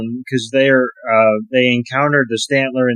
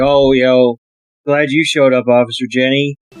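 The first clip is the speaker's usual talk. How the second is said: ordinary delivery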